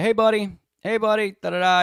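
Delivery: mock cop voice, high-pitched hollering. Retelling a cop waking a man on a ledge: imitating a cop yelling. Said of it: "He's yelling at him".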